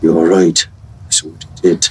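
low, hushed voice. A player's character steps up beside a companion to speak privately, in a low voice. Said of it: "in a low voice say".

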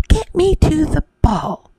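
loud, shouted delivery. Reading a story aloud, Cindy beats her fist against the wall: shouting. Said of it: "She beat her fist against the wall and shouted".

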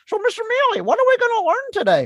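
very high, squeaky, swooping, sing-song sock puppet voice. Demonstrating a bit to listeners, the speaker goes into a sock puppet voice. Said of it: "a very sock puppet voice".

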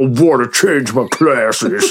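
put-on, slow monster-movie werewolf voice. Describing someone's performance, quoting his line in a werewolf voice. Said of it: "That's a werewolf voice".

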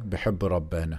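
speaking with an Egyptian accent. Repeating his phrase to the other speaker, in an Egyptian accent. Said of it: "with the Egyptian accent".

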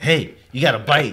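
loud, called-out yell. Telling a fishing story about shouting at another guy, retelling a yell. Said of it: "I'm over here yelling at this guy".

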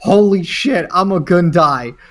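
mock sudden, high outburst scream. Speaker retells reacting to a Jedi appearing in an episode: retelling a scream. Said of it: "I literally screamed like".

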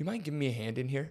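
hushed, calm, half-whispered tone. Speaker retells what they said to their friend: retelling a quiet half-whisper. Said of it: "I said it like quiet, like whispered it".

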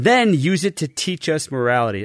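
ordinary delivery

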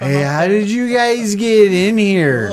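put-on stoned voice, very high and very loud. Playing someone super baked on the phone, stoned voice. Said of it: "I love it in a stoned voice".

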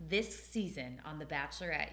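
ordinary talk, nothing marked

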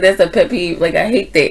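ordinary delivery

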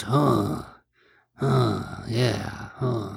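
slow, creaky, rough grunted huhs. Mocking what a character does all movie: Tommy Lee Jones impression. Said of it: "Is that your Tommy Lee Jones impression?".

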